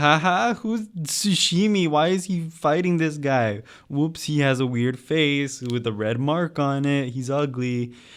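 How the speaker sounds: mock silly, goofy chatter. Retelling how she reacted to the first Avatar episode, imitating her silly tone. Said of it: "she starts off being all silly".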